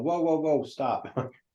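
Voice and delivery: high called-out voice. Stepping in as a character to stop an execution: yelling. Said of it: "I'm gonna move forward and yell".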